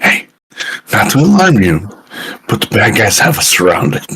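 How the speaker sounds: casual, stage-whispered delivery. Recounting warning others about twigs snapping nearby, whispering. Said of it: "I'm like whispering this".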